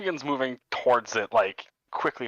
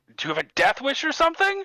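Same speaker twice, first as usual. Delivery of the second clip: very high, loud shouted voice; 4 dB louder than usual. Narrating a scene to the players, the speaker voices a man: yelling back. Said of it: "He just yells back".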